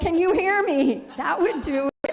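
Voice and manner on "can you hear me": raised, loud, high shout. Showing how to make the people next door hear: yelling. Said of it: "If I yelled".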